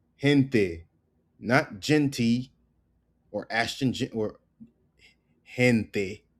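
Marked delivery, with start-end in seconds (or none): none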